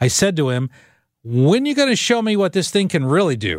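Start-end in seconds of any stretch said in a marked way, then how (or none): 1.2-3.6 put-on cheeky, snarky smart-aleck tone, fast. Retelling what he said to a man, in a put-on snarky smart-alecky voice. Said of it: "in the snarkiest, most smart-alecky voice I could muster".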